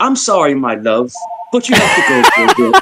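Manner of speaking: put-on British accent. Retelling what a friend said when sending him away: imitating Mel's British accent. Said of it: "that accent gets you".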